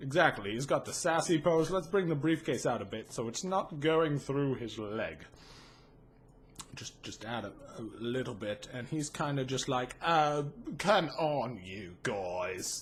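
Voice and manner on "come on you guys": very low pitch, very slow, drawn-out drawl. Retelling a character talking to the guys, in the G-Man voice. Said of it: "He speaks in that voice".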